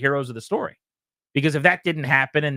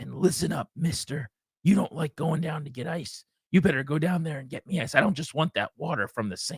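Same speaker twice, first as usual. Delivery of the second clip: soft, drowsy, groggy, barely-awake voice, acted out; 5 dB quieter than usual. Retelling what she said about fetching ice, the speaker imitates her half-asleep voice. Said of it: "half asleep".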